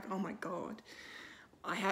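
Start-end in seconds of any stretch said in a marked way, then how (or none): 0.1-0.8 utter disbelief, shocked, stunned, caught off guard. Retelling Loki's reaction to seeing the Hulk: imitating Loki, shocked.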